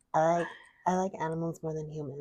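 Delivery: soft, acted socialite heiress voice. Explaining a little shimmy to the other speaker, doing a Paris Hilton impression. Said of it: "You do that voice very well".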